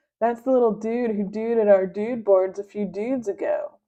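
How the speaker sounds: ordinary delivery, nothing marked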